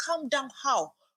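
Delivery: high, tearful shout while crying. Retelling being told by her to calm down, retelling crying and shouting. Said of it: "I started crying and shouting".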